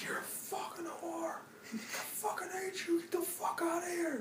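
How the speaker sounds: acted, very quiet, hushed, seething, furious rant. Retelling a man's outburst while he slammed things, acting out his rage. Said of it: "Total rage fest".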